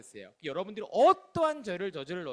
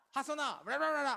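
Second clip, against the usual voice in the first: mock angry ranting scolding, higher and quieter; 7 semitones higher, 4 dB quieter than usual. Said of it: "떠들어".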